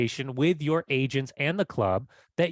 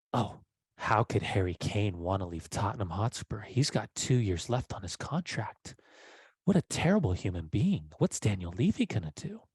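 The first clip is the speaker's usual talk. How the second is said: low, hushed, sly, suggestive, saucy put-on tone; 6 semitones lower, 5 dB quieter than usual. Acting out a thing we always say, in a mock-saucy voice. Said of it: "Why are you saying that so saucy?".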